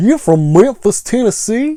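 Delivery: high, taunting wrestling-heel voice. Asking if this is how Andy Kaufman said it to Jerry Lawler, in an Andy Kaufman impression. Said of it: "Is that how Andy Kaufman said".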